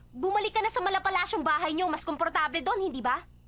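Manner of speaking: loud, high-pitched angry voice. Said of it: "Bakit ka ba galit na galit?".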